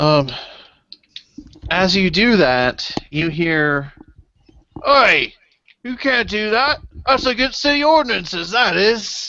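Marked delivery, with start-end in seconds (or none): 4.9-9.3 put-on tipsy town guard voice, calling out, pitched up. Voicing angry guards who shout up at a climber: drunk-sounding guard voice. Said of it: "They sound drunk".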